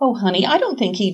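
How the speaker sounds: usual speaking voice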